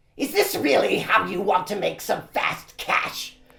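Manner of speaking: high-pitched, creaky, creepy voice. Performing a line on request in the voice of Squash the Pumpkin. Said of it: "your heebie-jeebie voice".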